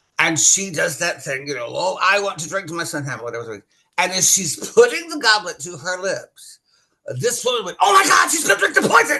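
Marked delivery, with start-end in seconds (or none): 7.8-9.2 very high, fast, rattled-off alarmed scream. Retelling a woman who yelled during Hamlet's poisoned-goblet scene, retelling a scream. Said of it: "Like screamed it out loud".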